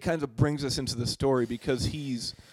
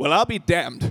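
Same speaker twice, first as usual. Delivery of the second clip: raised, well-enunciated, every word enunciated, up in volume; 2 semitones higher, 7 dB louder than usual. Reading a line he wrote down for a scene: Keith David impression. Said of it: "I hope to enunciate it just as well as Keith David".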